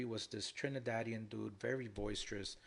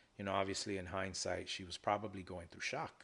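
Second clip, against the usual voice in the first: ordinary talk, nothing marked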